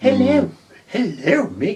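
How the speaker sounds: put-on posh, upper-class English accent, lady's voice. Imagining a posh English lady greeting him: posh English lady voice. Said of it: "especially a posh lady".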